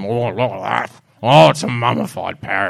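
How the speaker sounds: put-on deep, rough, growling pirate voice. Joking about mummified parrots seen on MasterChef, the speaker narrates: pirate voice. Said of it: "you're actually sounding like a pirate".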